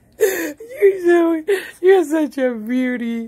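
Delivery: slow speech with words breaking through laughs. Playing with a dog at bedtime, laughing while talking. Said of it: "You got me cracking up".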